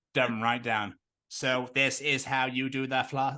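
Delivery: mechanical robot-like voice. Playing an alien, speaking in a robot voice. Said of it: "Why do I sound like a robot?".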